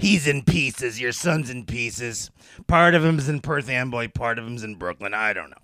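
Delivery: fake raspy chain-smoker voice. Retelling a psychic's blunt reading on Montel, imitating Sylvia Browne's voice. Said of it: "She had that voice, you know, she was like this".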